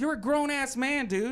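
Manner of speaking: shouting angrily. Confronting another speaker who says he was abused as a child: yelling at someone. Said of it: "When you yell at me like that".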